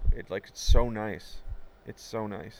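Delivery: slow voice, choking with emotion. Speaking about someone being kind to a loved brother, getting choked up. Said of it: "even now I'm getting choked up".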